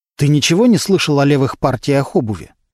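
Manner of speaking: plain reading voice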